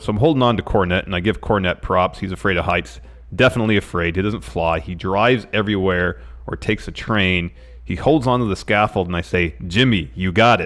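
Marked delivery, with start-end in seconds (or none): none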